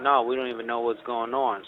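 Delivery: plain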